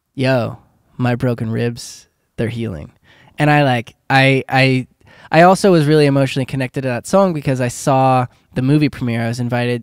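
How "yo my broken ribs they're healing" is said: usual speaking voice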